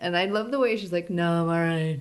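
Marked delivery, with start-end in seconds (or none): 1.1-2.0 mock bone-tired, drained, worn-out delivery. Retelling how Xena answers that she is fine: imitating Xena sounding exhausted. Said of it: "She's clearly exhausted".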